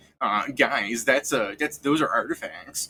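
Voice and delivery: hesitant, nerdy put-on character voice. Calling a co-host a turbo nerd, then doing Scrivens' turbo-nerd voice. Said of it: "your turbo nerd Scrivens here. Let me do his voice".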